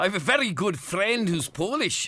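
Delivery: put-on Scottish accent. Reading out a listener's text on request: Scottish accent. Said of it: "do it in a Scottish voice".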